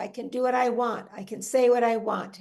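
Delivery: ordinary talk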